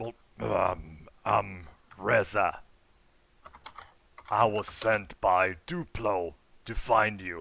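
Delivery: rasping, rough-edged character voice. Describing a character's shoulder-mounted pistol, the narrator gives his line in a raspy voice. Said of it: "with a raspy voice, he goes".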